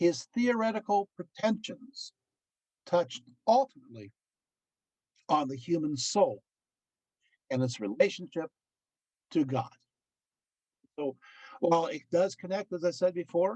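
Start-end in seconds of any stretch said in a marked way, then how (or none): 0.0-9.7 slow, deliberate, halting reading, broken into pieces. Speaker reading a quoted passage aloud to an audience: slow deliberate reading. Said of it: "I'm going to go slow".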